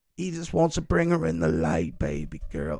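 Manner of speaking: put-on unsettling, creepy man's voice. Imitating the man from the voicemail they discussed: creepy put-on voice. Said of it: "how creepy my imitation of it is".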